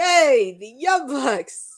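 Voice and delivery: dry, slow, very sarcastic cheer. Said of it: "I'm being very sarcastic about this".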